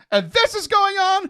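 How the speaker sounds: high, loud, despairing cry. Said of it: "And I was like".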